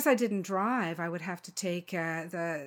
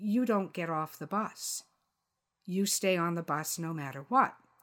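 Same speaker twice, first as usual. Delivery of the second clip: imitated whispering. Retelling the bus driver's quiet warning to stay on: imitating a whisper. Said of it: "he whispered to me".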